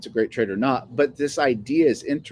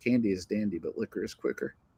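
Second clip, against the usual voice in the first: put-on whisper, quieter; 2 semitones lower, 8 dB quieter than usual. Retelling a movie scene where a secret is shared: imitating Willy Wonka whispering. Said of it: "And he just whispers over".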